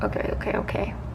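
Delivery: soft, nervous, shaky whisper.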